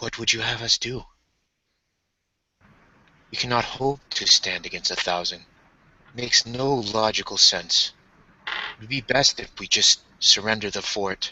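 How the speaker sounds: gentle, soft, feminine-leaning delivery. Voicing a masked character answering Maria: soft, almost feminine voice. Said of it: "in a soft, almost feminine voice".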